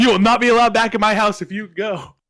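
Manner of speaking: shrill, very high, very loud screaming. Retelling what she yelled at the speaker, imitating her yelling. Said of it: "she's yelling".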